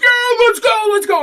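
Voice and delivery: very high, shrill, obnoxious overacted cheering. Retelling how a man in the theater cheered, mock obnoxious overacted cheering. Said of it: "in the most obnoxious, overacted way possible".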